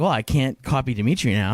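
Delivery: ordinary delivery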